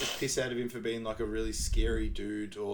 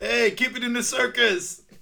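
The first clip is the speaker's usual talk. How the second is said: high, loud, slow laughing mock heckling yell. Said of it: "the last one is".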